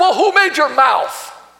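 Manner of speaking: mock fed-up, frustrated and exasperated tone. Retelling God's reply to a man making excuses, God's frustrated voice acted out. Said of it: "Did you hear the frustration in God's voice?".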